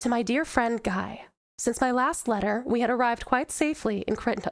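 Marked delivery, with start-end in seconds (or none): 0.0-1.2 tender, gentle, motherly reading voice. Voice acting demo, reading a letter aloud in a soft-spoken mom voice. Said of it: "we call it mom voice, but it's basically like my, my very, it's, it's a soft spoken voice".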